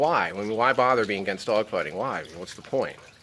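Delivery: ordinary delivery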